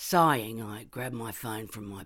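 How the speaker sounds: plain reading voice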